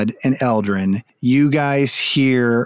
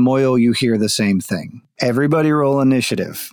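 ordinary delivery

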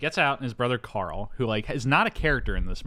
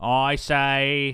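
put-on Boston accent, delivered much slower; 2 semitones higher, 3 dB louder than usual. Show how far the actor in the Boston movie does not go, in a full JFK Boston accent. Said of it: "He doesn't go full JFK like".

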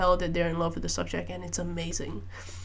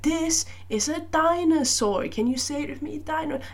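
put-on high-pitched baby talk voice. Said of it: "such a high-pitched voice".

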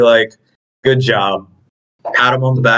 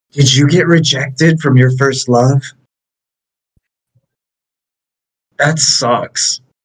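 voiced stage half-whisper; 3 semitones higher than usual. Asking another character a teasing question in the game: half-whispering. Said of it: "I'm gonna whisper to Kairi".

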